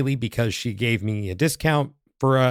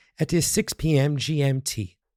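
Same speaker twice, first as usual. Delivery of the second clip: very slow, fake British accent. Giving the workshop time for listeners across the pond: put-on british accent. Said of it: "my little British accent there".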